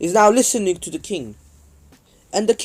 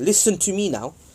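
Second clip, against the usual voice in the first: plain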